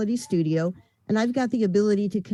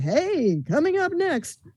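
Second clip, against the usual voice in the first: slow, pitched-up cinema trailer announcer voice; 7 semitones higher than usual. Explaining old-school voiceover styles to an interviewer, as a movie theater announcer. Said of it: "or the movie theater guy".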